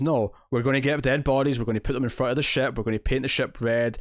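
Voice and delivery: ordinary talk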